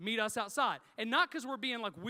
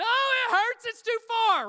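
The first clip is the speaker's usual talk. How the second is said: high, loud, pained yell; 13 semitones higher, 11 dB louder than usual. Retelling being poked in the hall at work: imitating his own yelling. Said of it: "and I'm yelling".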